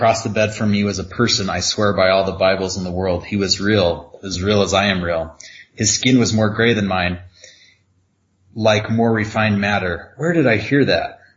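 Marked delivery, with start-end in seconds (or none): none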